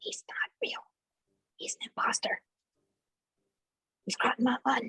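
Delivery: breathy, secretive whisper. Warning nearby party members in character that someone is an imposter: whispering. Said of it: "so I whisper that to the people closest".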